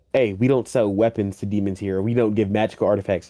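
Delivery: ordinary delivery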